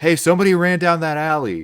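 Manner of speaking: shrill, loud yell pitched very high. Game narrator voices somebody who spots a player running: yelling out. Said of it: "you do hear somebody yell out".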